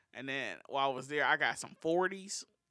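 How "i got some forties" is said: slipping into a Southern-sounding accent. Telling another speaker about buying drinks on a trip: sounding Southern. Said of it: "You sounded so Southern when you said that".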